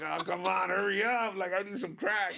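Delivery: desperate, frantic, impatient freak-out, high-pitched. Retelling a crackhead waiting in line behind a kid: imitating a crackhead freaking out. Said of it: "losing his shit in the back".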